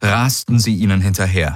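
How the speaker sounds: ordinary delivery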